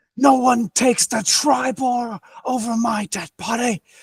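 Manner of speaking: fierce, high, defiant battle yell. Player voices her sword-drawing character facing an orc, yelling out. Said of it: "and she just sort of yells out".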